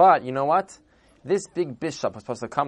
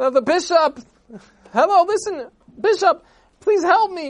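very high, loud, shrieking scream; 5 dB louder than usual. Telling a story, the speaker acts out a father stopping the bishop's wagon: retelling screaming. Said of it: "started screaming".

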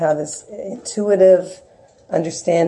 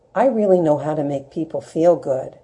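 put-on childlike voice and speech. A mother recalls what her son once told her, imitating a childlike tone. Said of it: "he said it in a childlike way".

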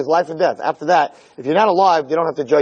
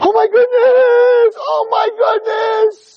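long, very high, very slow, drawn-out, shocked yell; 4 dB louder than usual. Showing the first reaction to news of a death: imitating a long yell of shock. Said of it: "they give out a long yell".

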